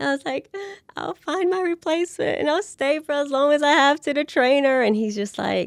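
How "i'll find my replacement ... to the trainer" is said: high, teary, sobbing, crying voice. Recalling going into the doctor's office with her news, acting out her crying plea. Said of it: "I'm like boohoo crying".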